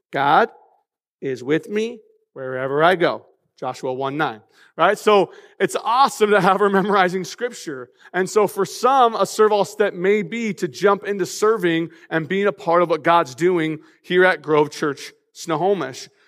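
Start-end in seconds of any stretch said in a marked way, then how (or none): 0.1-4.4 put-on little child voice, slower. A parent imitates their daughter saying her memory verse in a little child voice. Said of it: "is in her little voice. She goes like this".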